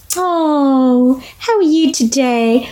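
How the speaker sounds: put-on high-pitched motherese baby talk, drawn-out "oh". Explaining how adults talk to babies, demonstrating in a high-pitched baby-talk voice. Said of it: "It's the high-pitched voice we use".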